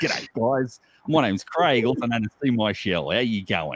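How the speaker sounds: slightly put-on Australian accent, laid on a bit. Talking about keeping accents, the speaker shows how it sounds: slightly put-on australian accent. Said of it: "You put it on a little bit".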